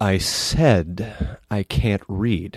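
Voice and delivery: haughty, puffed-up, pompous, self-important voice. After asking the group if they want to hear it, doing a pompous illiterate impression. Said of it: "my impression of a pompous illiterate".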